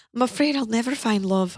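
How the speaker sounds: put-on British accent. Urging someone not to stay, mocking their reason for staying, British accent.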